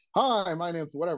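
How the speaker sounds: voice thrown outward energetically. Showing beginner DJs how to project into the mic: projected, energetic voice. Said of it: "you project it out more".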